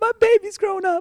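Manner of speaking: very high, teary, sobbing voice. Retelling the mother's words at the DMV, imitating her crying. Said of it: "She's like crying".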